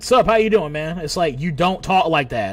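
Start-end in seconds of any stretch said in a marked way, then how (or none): 0.0-1.0 put-on try-hard, young-sounding, loud, forced hip voice. Mocking old people who act hip: imitating an old person acting hip. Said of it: "old head that's trying to act all hip and young".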